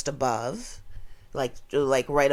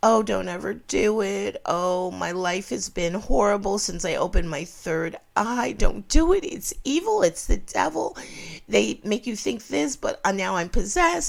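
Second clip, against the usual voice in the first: high, fake tearful sobbing, pleading tone, no real tears; 7 semitones higher than usual. Imitating a lady in a video who sounded like she was in tears: imitating someone fake crying. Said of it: "sounding like she was in tears".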